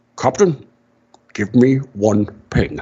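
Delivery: put-on Scottish-accented movie-star voice. Quoting the captain's line on the bridge to show the actor's accent, in a Scottish Sean Connery voice. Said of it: "he is freaking Scottish Sean Connery".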